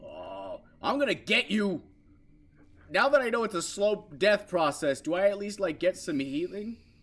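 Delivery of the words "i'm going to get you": fierce, heated, aggressive, swooping taunting. Fighting back against a monster chasing them in a game: aggressive. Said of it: "I'm really aggressive right now".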